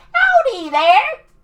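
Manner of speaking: very high, very loud cartoon talking raccoon voice. Describing a talking raccoon on a screen: talking raccoon voice. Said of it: "He's, like, a talking raccoon. He's like".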